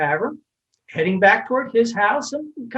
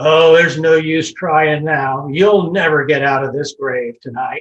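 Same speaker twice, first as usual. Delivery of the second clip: raised, hoarse, groggy, half-asleep voice; 7 semitones lower, 5 dB louder than usual. Telling a story, Charlie speaks to a man trying to get out of the grave, Charlie's mock half-asleep hoarse voice. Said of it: "says in this kind of half asleep, hoarse voice".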